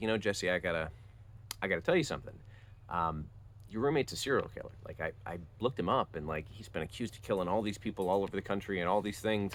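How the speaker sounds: normal talking voice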